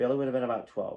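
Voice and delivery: normal talking voice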